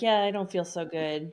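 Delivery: put-on hungover voice. Retelling a scene where Buffy is hungover the next day: imitating hungover Buffy. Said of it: "poor Buffy is just h-, hungover".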